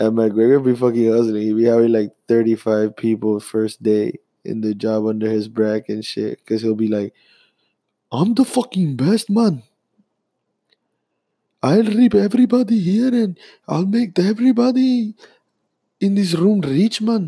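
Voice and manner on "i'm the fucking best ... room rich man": put-on Indian-Irish accent, very high. Imagining McGregor addressing everybody in the room on the job, as a McGregor impression in an Indian-slash-Irish accent. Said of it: "That was my Indian slash Irish accent".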